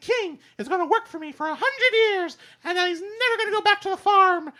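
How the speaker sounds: voice goes way up high and loud. The speaker says something about Pink and the king: Mickey Mouse voice. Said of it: "in the Mickey voice".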